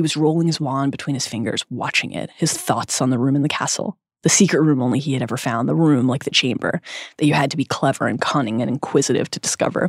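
normal talking voice

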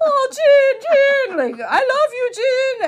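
very loud, very high, drawn-out shrieking scream. Retelling how a fan watching at home screamed: imitating a fan screaming. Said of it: "So she's screaming".

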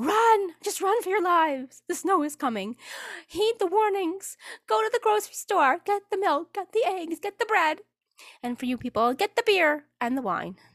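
very high, panicked, alarmist weatherman broadcast voice. Imagining being a weatherman reporting outside in the snow: pretend alarming weatherman warning. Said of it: "and go".

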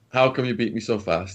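ordinary talk

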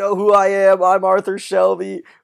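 loud, high-pitched hollered yell. Retelling a scene where police pull Arthur away: imitating Arthur Shelby yelling. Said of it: "and he's yelling".

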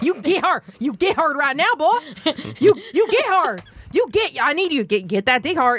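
put-on Texas accent. Telling how she talks to her husband when time is short, Texas accent. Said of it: "I do it in this like Texas accent".

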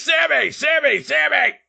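high, rough screamed announcer voice. Recapping a wrestling match, the speaker acts out announcer JR screaming. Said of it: "JR screams out".

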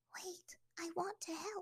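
very quiet, slow, hushed voice. A narrator reads an old woman stopping Aang and offering help, hushed. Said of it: ""I am Water Sage [name]," the woman said, revealing a kind, elderly face".

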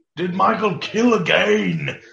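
slow, high, heavy, exaggerated British accent, drawn out.

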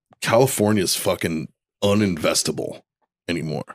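plain

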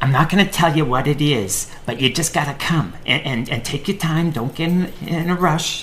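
imitated Boston accent. Retelling a phone call from the speaker's mom: imitating a boston accent. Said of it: "they have Boston accents, so I'll imitate that".

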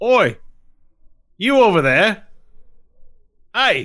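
very loud, shrill, high, drawn-out booming yell. Voicing a guard calling after a player's character: NPC yelling after someone. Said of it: "ignore his initial yelling at me".

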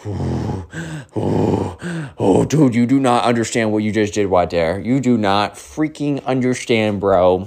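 mock swaggering, challenging, cocky, puffed-up childlike bravado. Retelling how a kid stood up to confront another: imitating a kid puffing out his chest. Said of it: "puffing out his chest".

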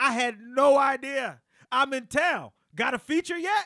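play-acted, loud, high, exclamatory delivery on every line. Reading aloud the message he sent Kevin: retelling exclamation-point text. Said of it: "I'm going to read it with the exclamation points".

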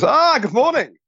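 very high-pitched character voice. Retelling what a character says instead: Uncle Monty voice. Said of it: "in Uncle Monty's voice".

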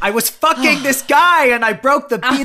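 shrill, booming, drawn-out, high, slow, loud comic delivery. Acting out a funny quote in a Jerry Seinfeld voice. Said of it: "I just went a bit Jerry Seinfeld then".

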